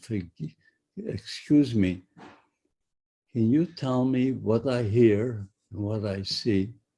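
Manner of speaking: usual speaking voice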